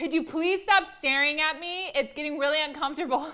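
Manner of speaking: sudden, very loud, high-pitched yelling outburst. Retelling how she told a man staring at her to stop: imitating herself yelling. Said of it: "I, like, yelled it at him".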